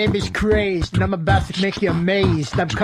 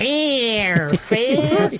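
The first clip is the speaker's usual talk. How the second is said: creepy, scary cartoon voice, pitched higher; 4 semitones higher than usual. Going back into a voice after another speaker asks: scary cartoon voice. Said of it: "That's a scary cartoon voice".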